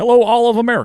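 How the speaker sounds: very high, loud speech-giving voice. Joking with others, opening a proposal to America: Obama voice. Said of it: "you're doing an Obama".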